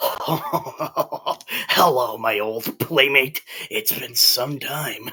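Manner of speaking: distorted voice. Game master voices a presence speaking into a player's mind: distorted voice. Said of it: "a distorted voice enters your mind".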